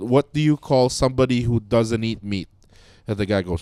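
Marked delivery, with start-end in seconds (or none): 0.0-2.5 thick, put-on Filipino accent. Retelling an Instagram video of a man interviewing his grandpa, imitating a Filipino accent. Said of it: "in his Filipino accent".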